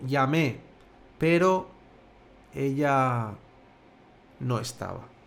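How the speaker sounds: hesitant, doubtful, slow, drawn-out, holding back. Spanish example line about calling her, now hesitant, delaying "no estaba". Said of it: "O algo más dubitativo".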